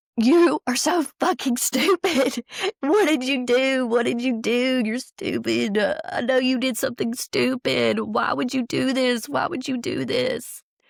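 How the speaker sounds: put-on, high-pitched screaming outburst. Recalling being on the knees at a bad moment, re-enacting own screaming at him. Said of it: "I'm on my knees screaming".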